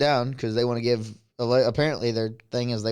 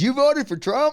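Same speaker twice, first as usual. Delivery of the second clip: play-acted, real loud, shrill, high-pitched blurted shout; 14 semitones higher, 4 dB louder than usual. Retelling what a man at work blurted out, retelling a loud shout. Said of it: "Real loud".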